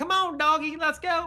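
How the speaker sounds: hollering like calling in cattle. Luring monsters toward the character with a whip: calling in cattle. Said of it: "I'm just calling in the cattle".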